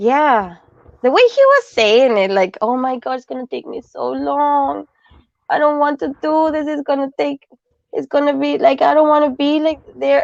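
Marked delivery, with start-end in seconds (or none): 2.6-10.2 mock pleading, higher. Retelling how someone sounded asking for a ride to Cornwall: imitating someone begging. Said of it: "it just sounded to me like he was begging".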